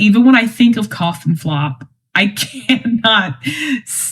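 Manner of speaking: talking while cracking up, laughing through words. Describing a favourite comedy sketch, laughing while talking. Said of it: "talk about it without laughing".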